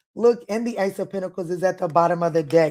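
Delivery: plain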